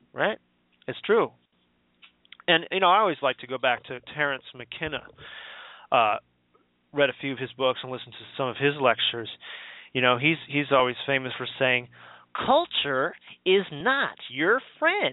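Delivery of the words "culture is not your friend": funny, high, swooping, very slow drawl. Quoting a famous line of Terence McKenna in his funny voice. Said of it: "His funny voice".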